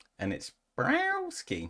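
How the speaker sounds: very high voice said like a cat's meow. Saying a woman's surname aloud, saying it like a cat. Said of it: "until I said it like a cat".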